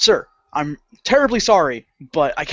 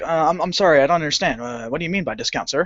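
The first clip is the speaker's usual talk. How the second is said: mock-polite, put-on civil tone. Recounting answering a man who demands a discount for a dented box, retelling forced civility. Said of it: "of course I had to be civil about it".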